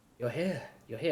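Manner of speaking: giggling, laughing, teasing woman's voice. Voicing a mysterious voice in the mist calling a player: giggling teasing woman's voice. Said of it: "almost like a woman, giggling and laughing. Teasing you".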